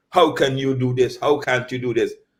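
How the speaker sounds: ordinary talk, nothing marked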